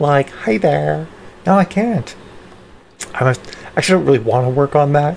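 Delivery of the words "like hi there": put-on creaky Valley Girl voice with vocal fry. Demonstrating a Valley Girl voice after saying they can't do it well anymore. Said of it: "I used to be able to do a really good Valley Girl".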